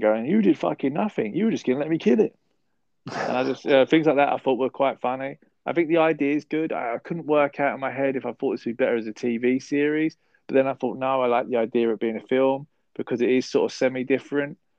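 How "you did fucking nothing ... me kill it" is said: high-pitched shouted outburst. Retelling a film scene where the sister shouts: imitating someone shouting. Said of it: "she was shouting".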